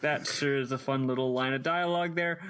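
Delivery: ordinary delivery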